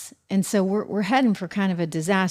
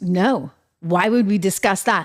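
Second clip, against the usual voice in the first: put-on furious, angry tone. Retelling how a doctor answered a reporter's question: imitating a furious reply. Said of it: "she was pretty furious".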